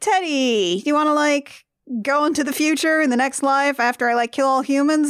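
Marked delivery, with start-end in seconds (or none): none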